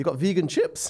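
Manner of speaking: put-on high-pitched, surprised Geordie accent. Retelling a meal out, the speaker quotes a man's question in a Geordie accent. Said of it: "That was a Geordie accent".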